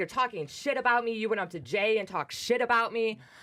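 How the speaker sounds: put-on angry woman's voice. Retelling a confrontation outside a party: imitating an angry woman. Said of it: "she just got very angry, and she's like".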